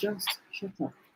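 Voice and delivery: very quiet, soft, gentle, hushed voice. Retelling words he says he was told during a dispute, very soft voice. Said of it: "Very soft voice".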